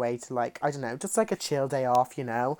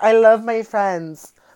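put-on very loud, high, drawn-out valley girl drawl; 9 semitones higher, 12 dB louder than usual. Joking that they sound like they're from the valley; valley girl voice. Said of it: "I'm from the valley, as in, like, I'm from, like, LA, and I'm like".

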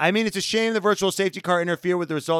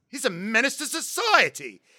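put-on angry outburst, slower; 2 semitones lower, 4 dB quieter than usual. Retelling how a friend ranted in the car, imitating an angry complainer. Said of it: "such an angry Karen in the fucking car".

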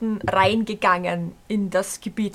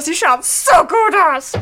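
aggressively upbeat, loud, high, gushing; 7 semitones higher, 6 dB louder than usual. Quoting a woman who complimented the speaker, mock aggressively positive compliment. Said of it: "so aggressive Positivity-mäßig".

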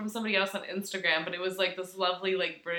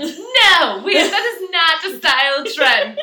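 very high, very loud, shrill, angry British woman's voice; 9 semitones higher, 13 dB louder than usual. Retelling a clip about ballet flats; mock-angry british woman. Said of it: "she was all angry".

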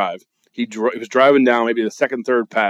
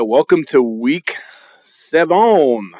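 very drawn-out, slow, fake French accent; 2 semitones higher than usual. Opening after failing to find a belgian greeting: fake french accent. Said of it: "you put a French accent on it".

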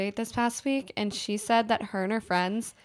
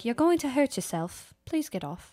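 terrible put-on British accent; 3 semitones higher than usual. Retelling what a hotel bellhop told them, in a terrible British accent. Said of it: "Is that your British accent?".

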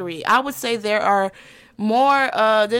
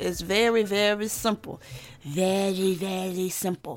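slow, hushed, put-on vampire voice; 3 semitones lower, 7 dB quieter than usual. Podcast host opening a quick episode for listeners, in a vampire impression. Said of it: "that was my vampire impression".

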